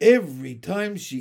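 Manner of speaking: ordinary delivery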